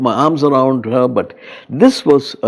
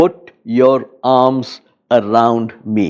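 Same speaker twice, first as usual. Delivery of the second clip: very firm, assertive, insistent, slow delivery; 2 semitones lower than usual. Retelling his wife's words from the hospital bed: imitating an assertive tone. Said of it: "In a very assertive tone".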